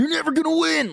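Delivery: mock, very high, shrill, loud yelling scream. Retelling how the game's gang members yell at the player: imitating gang members screaming.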